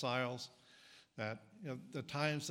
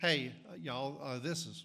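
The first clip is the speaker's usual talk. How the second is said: put-on Southern accent; 3 dB louder than usual. Joking about how Peter would open his letter: imitating Peter with a Southern accent. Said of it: "I assume Peter was Southern".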